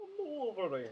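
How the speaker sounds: put-on Italian accent. Redoing Wolverine's line to the little girl: Wolverine with Italian accent. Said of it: "He's Italian".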